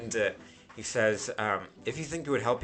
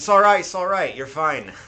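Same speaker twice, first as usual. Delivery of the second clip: put-on loud accent drifting between Scottish and Irish; 6 semitones higher, 11 dB louder than usual. Speaking as Tandem, accent drifting into Scottish and Irish. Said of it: "then I went into like Scottish, Irish".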